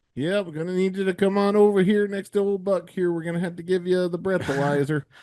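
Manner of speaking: put-on Canadian police officer. Acting out a traffic stop in canada: playing a canadian cop. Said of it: "this is what it looks like when you get pulled over in Canada".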